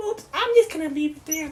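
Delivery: high, sneaky put-on kid voice.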